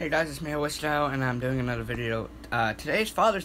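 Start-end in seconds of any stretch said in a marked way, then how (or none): 2.5-3.5 voice breaking mid-line, pitched up. Opening his video and announcing the day, voice cracking. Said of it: "my voice cracked".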